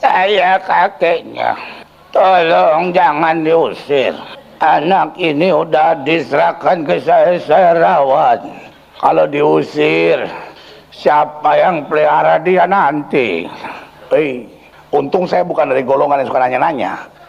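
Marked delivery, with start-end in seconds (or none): 0.0-13.4 put-on very slow, weeping, crying old-man voice. Retelling what cried out during an exorcism: imitating a crying grandpa voice. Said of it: "suara kakek-kakek".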